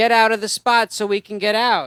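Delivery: mild mock yelling, barked out. Retelling how a woman at the car window yelled: imitating someone yelling. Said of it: "she just starts yelling at me".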